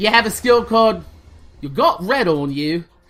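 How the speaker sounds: put-on British accent. Naming a game skill, in a Shaun of the Dead British accent. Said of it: "the reason I do that in a British accent".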